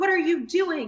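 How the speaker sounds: play-acted, high, exasperated, disbelieving, frustrated scream. Retelling own reaction to the team's goalie situation: imitating own screaming. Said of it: "I'm, like, screaming".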